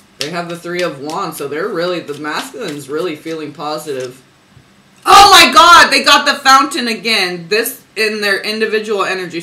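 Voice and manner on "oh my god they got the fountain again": very loud, high, thrilled, excited shout. Tarot reader reacting to a card coming up again, excited yell. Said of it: "I didn't mean to yell if that was loud".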